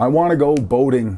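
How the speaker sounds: ordinary talk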